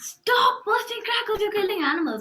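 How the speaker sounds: loud, high, mock aggressive scolding yell. Retelling how a boy in the building yelled about crackers: imitating someone yelling aggressively. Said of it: "yelling at the ceiling".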